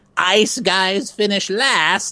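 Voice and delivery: very high-pitched, slow villain voice. Retelling a line voiced as a fire-throwing villain: Inferno villain voice. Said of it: "play a guy named Inferno and throwing fireballs".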